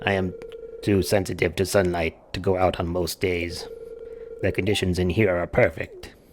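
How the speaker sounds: throaty shadow voice. Speaker voicing Krobus's lines to a visitor, low throaty Krobus voice. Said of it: "low like way back in the throat".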